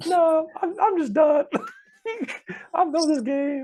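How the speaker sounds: very high, very loud, shrill, squeaky voice. Retelling an impersonation of a former player quitting: imitating a high-pitched voice. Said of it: "this dude's voice is so high-pitched".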